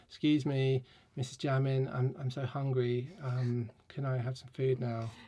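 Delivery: pleading, begging, pestering dog voice. Voicing the dog Alaska begging for food: voicing Alaska the dog begging. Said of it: "she's like".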